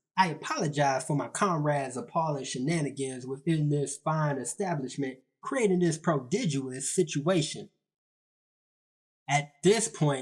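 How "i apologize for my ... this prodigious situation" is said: usual speaking voice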